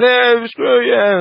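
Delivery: mock very high heated voice. Retelling the stranger threatening them at the water fountain: imitating a raised threatening tone. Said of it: "heighten up his tone with me".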